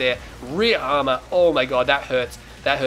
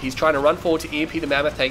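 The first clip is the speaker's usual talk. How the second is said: usual speaking voice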